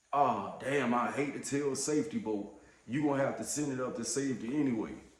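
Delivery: ordinary delivery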